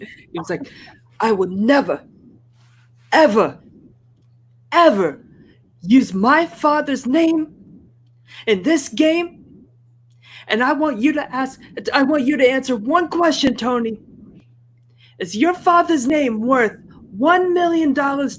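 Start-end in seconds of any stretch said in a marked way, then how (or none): 1.2-18.4 very high-pitched character voice, pushed way up. Redoing an earlier impression of a woman confronting Tony in a game, impression of Trish. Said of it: "I did that impression of Trish".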